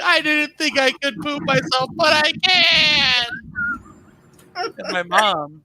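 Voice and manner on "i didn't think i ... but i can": put-on, very high sobbing wail, "can" stretched. Retelling what they said to their mom as a six-year-old, acting out crying and screaming. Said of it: "And I'm crying and I'm screaming".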